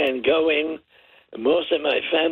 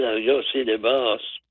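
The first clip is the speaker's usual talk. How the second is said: ordinary talk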